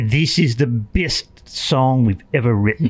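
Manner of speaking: put-on poor, unconvincing Australian accent. Recalling songwriting sessions, the speaker imitates Keith Scott in a terrible Australian accent. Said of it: "That's a terrible Australian accent".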